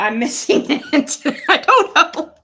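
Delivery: high, loud laughter through the words.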